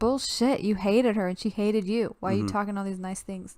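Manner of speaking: plain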